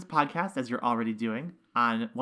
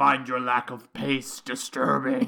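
low, menacing voice; 3 dB louder than usual. Imagining James Earl Jones motivating people on the elliptical, use a deep, scary James Earl Jones voice. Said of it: "deep, scary voice motivating on the elliptical".

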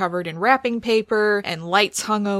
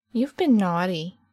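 put-on unsettling, creepy small child character voice. Playing the small child in a role-play scene, speak in a creepy small child voice. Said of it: "the small child being creepy".

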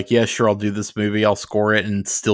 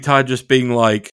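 usual speaking voice

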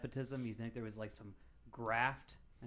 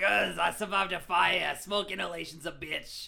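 very loud, high-pitched, rough, grody rasp; 7 semitones higher, 12 dB louder than usual. Joking as a burn survivor the others are discussing: grody Bobby Henline voice. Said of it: "why you gotta give him such a grody voice?".

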